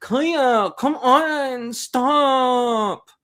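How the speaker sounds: very slow, high, whiny complaining plea. Mocking a man talking to his dog, imitating a whiny voice. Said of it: "He he does that whiny voice thing like".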